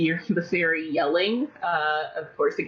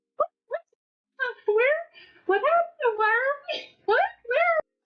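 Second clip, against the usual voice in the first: tiny, very high squeaky pixie voices, rattled off. Game master voicing pixies just woken inside a bush, squeaky pixie voices. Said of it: "Um, you hear more squeaky voices from within the bush. / Um, you hear more squeaky voices from within the bush".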